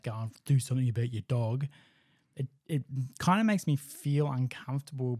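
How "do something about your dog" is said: ordinary talk, nothing marked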